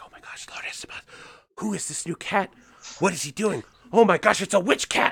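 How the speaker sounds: hushed, excited, breathy whispered chatter. Voicing a crowd of cats gossiping about a newcomer: whispering cats. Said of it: "they're all whispering".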